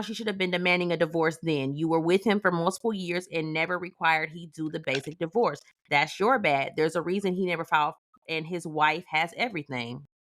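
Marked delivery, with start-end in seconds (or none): none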